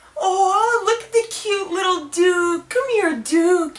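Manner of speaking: put-on very loud, high-pitched, gushing baby talk. The speaker shows the wrong way to greet the dog Duke: high-pitched baby talk. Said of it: "with high-pitched voice, uh, baby talking".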